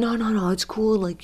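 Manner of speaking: put-on New York accented voice.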